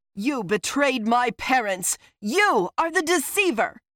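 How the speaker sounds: yell that builds. Yanking free and facing him, the narrator speaks, shouting. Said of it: "I shouted".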